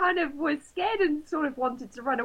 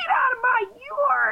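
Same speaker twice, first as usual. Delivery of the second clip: mock very high, hostile, aggressive yell; 10 semitones higher, 6 dB louder than usual. Telling of cutting through a man's yard, speaker acts out his reaction: retelling a loud, aggressive shout. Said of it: "really loudly and really aggressively".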